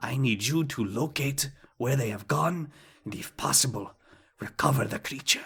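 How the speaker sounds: very hushed tones. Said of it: "he says this in very hushed tones".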